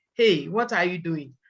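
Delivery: ordinary talk, nothing marked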